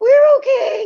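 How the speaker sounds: shrill, sky-high, loud squeaky squeal. Describing a guy on the ground with his hands up, imitating his voice going way up. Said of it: "His voice goes up like six octaves".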